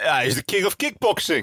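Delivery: put-on Dutch accent, pitched high. Asked to answer a question in his best Dutch accent, in a put-on Dutch accent. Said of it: "answer my question in your best Dutch accent".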